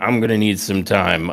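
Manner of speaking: put-on seething angry voice. Retelling Finn's reply to a taunt: imitating Finn Bálor seething. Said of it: "who is now seething".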